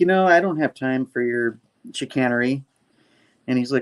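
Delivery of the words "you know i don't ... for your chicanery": ordinary delivery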